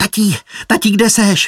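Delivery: high, squeaky voice. Narrator reads Pírko bursting into the birdhouse calling for his dad, Pírko squeaking. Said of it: "Pištěl".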